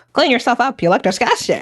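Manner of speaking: comic nun character voice, swooping pitch. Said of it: "This voice is so funny".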